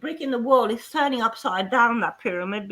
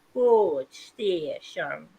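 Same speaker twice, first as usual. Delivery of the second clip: put-on Yorkshire-style Leeds accent with local rhythm; 5 semitones lower than usual. Retelling how people in Leeds spoke to a newcomer: imitating Leeds locals' speech. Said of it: "they would say to me".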